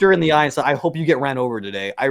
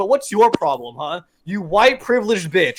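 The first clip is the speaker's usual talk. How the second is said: put-on yelling, higher pitch; 4 semitones higher than usual. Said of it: "as I'm yelling at her".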